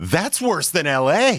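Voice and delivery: alarmed, dismayed, panicked news-anchor read, high and swooping. Retelling a news anchor reading a traffic survey: panicked Warner Saunders impression. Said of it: "with this panic in his face".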